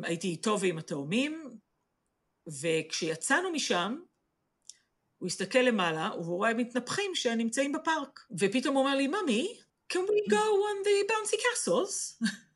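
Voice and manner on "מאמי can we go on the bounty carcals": put-on very high, sweet, cute British child accent. Retelling her child asking to go on the bouncy castles, cute British accent. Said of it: "במבטא בריטי חמוד כזה".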